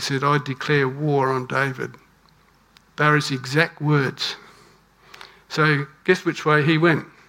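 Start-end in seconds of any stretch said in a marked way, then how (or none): none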